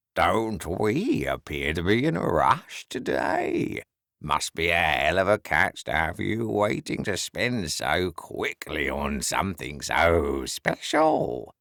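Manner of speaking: slow, gravelly, grinding voice. A fiendish creature salesman teases a hurried customer, in a voice like chewing gravel. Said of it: "its voice sounding like someone chewing on a mouthful of gravel".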